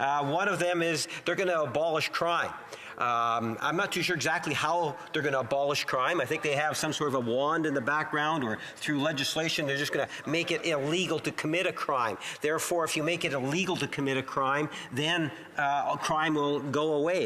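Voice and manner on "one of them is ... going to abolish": ordinary delivery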